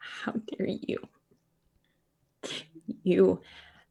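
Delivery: whispered, slow, breathy, tearful, words barely coming out. Acting out a character's line in a game scene: character crying. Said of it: "crying and she says".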